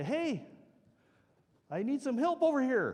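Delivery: shrill, very high, loud yell. Retelling calling out to a stranger in ice fog: retelling a yell for help. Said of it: "look over and I yell".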